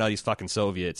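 ordinary talk

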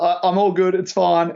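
high, panicky voice, pitched way up. Retelling replying to someone who called out after the chai spilled, mock-panicked. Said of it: "panicked voice".

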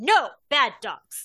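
loud, stern, authoritative commanding voice. In a game, a player's character orders the dogs to stop: commanding voice. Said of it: "use my most like commanding voice".

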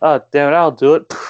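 exaggerated, high Texan cowboy accent. Retelling a scene where men argue who goes first, over-the-top Texan cowboy impression. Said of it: "over the top, you know, Texan cowboy impression".

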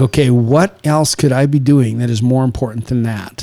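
usual speaking voice

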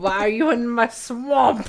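booming, slow ogre voice. Retelling a friend's Snapchat video made with a filter: imitating Shrek voice. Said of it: "she did the Shrek filter".

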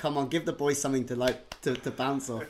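play-acted dead, flat, expressionless tone. Imitating a player who stayed ice cold while urging on teammates: imitating a deadpan delivery. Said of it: "nothing, like, dead, deadpan, and be like".

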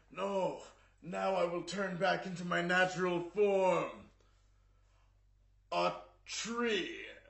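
high, loud, slow and grand villain voice. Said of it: "and then he's just like".

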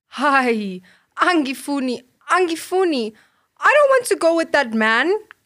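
very slow, high, drawn-out frightened cry. Nombulelo answers her aunt about going with the man, crying out. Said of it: "cried Nombulelo".

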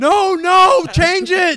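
very loud, very high, shrill, stretched, drawn-out screaming. Retelling how they screamed to change the TV show: imitating own screaming. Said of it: "I started screaming".

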